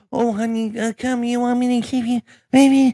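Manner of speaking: put-on high, sugary, sweet babying coddling voice. Imitating a liberal parent soothing a misbehaving kid: imitating a coddling parent. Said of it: "You have to coddle your child".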